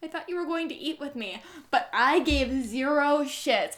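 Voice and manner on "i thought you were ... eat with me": small, soft, faraway voice, hurried. Retelling her words heard in the distance while walking out; small voice. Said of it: "in a small voice".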